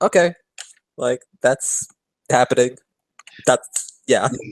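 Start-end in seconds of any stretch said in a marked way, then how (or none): none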